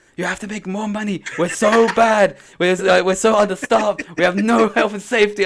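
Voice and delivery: loud shout. Retelling an Uber driver telling a passenger to join the union: imitating someone shouting. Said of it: "he was proper shouting".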